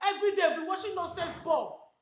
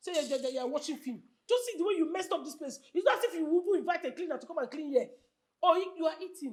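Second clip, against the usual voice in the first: plain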